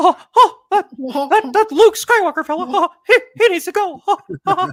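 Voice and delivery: very high, very loud squeak. Imagining Darth Vader plotting against Luke Skywalker, in a Mickey voice. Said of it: "he just sounds like Mickey".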